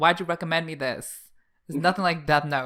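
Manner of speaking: put-on irritated complaining. Retelling own past reaction to a recommendation: imitating own annoyed complaint. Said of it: "kind of pissed off at Mal".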